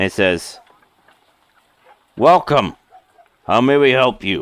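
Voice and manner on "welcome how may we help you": hard, severe, stern tough voice. Voicing a character greeting a customer at the shop, in a stern, tough voice. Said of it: "He says in a stern, tough voice".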